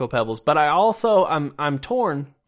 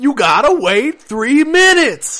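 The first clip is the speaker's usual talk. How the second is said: put-on screaming voice, higher and louder; 10 semitones higher, 8 dB louder than usual. Imitating an audiobook narrator reading the book, screaming: screaming Samuel L. Jackson voice. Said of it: "He's gonna be screaming it".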